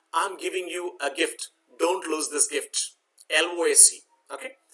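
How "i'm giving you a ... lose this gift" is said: normal talking voice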